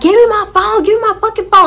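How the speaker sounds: acted furious scream, raging, very high, shrill, loud. Recounting falling and hurting a hand while chasing him: retelling an angry scream. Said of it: "I'm screaming. I'm like".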